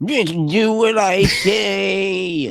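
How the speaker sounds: slow droopy cartoon voice. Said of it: "I made him droopy dog a little bit".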